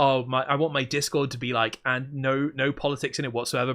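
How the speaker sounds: ordinary delivery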